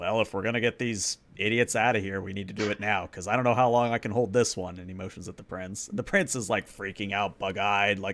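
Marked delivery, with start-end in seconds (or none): none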